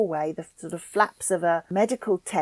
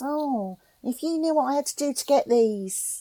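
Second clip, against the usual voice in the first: put-on Cockney accent with raised pitch; 6 semitones higher than usual. Retelling what a woman says, in a Cockney accent. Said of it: "a Cockney service woman".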